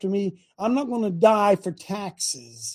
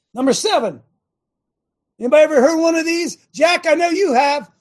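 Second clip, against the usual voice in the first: loud, high-pitched yelling; 7 semitones higher, 6 dB louder than usual. Speaker, boxed in for three days, presenting item number seven to the group, yelling. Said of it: "Sorry, I'm yelling".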